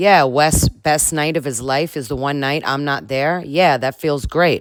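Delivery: normal talking voice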